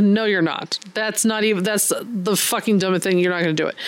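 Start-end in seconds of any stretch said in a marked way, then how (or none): none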